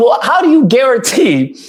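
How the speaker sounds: normal talking voice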